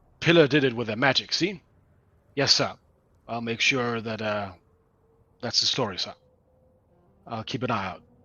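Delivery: straight-faced, dutiful, flat, deadpan delivery. A narrator voices her reply to the player's order, deadpan like a good sergeant. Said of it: "she deadpans you like a".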